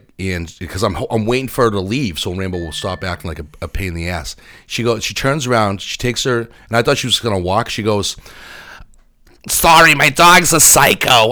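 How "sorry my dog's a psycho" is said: high, loud put-on Boston girl drawl. Retelling what a dog owner said to him; Boston girl accent. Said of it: "why the fuck do Boston girls have to talk like that".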